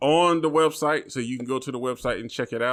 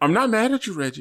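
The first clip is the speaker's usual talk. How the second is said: pitched-up, polite tone with veiled menace; 6 semitones higher than usual. Acting out Kimberly's polite but threatening messages to Reggie: imitating Kimberly's polite threat. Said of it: "the most polite but threatening messages".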